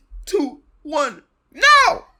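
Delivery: high, loud shouted yell.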